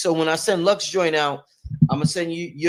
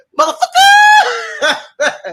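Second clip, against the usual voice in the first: very high, loud, swooping yelled exclamation; 7 dB louder than usual. Recalling how Panic used to say a word: imitating Panic's catchphrase. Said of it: "Panic used to say".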